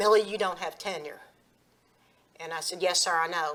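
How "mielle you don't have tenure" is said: put-on deep, menacing, threatening voice, quieter. Recalling being called in by the principal, the speaker imitates Gary Gibson's deep threatening voice. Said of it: "he had this deep, very deep, threatening kind of voice".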